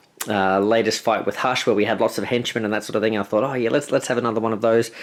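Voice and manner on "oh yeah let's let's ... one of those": ordinary talk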